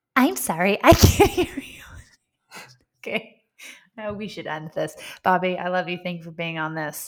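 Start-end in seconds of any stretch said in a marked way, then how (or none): 0.2-1.9 put-on robot assistant voice, raised and higher. Playing a say-a-command game, answering in a fake Siri robot voice. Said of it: "You're good at this".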